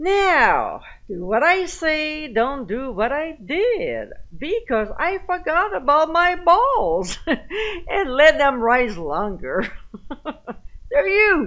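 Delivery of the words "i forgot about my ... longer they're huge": pitched-up talk bubbling through laughter. Giving a baking recipe step by step, laughing while speaking.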